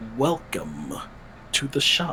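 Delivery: very low, hushed, bottom-of-the-register tone. Narrating a game, voicing a man at a shop counter greeting the group, very low tone. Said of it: "you just hear him in the low, low, low, low tone".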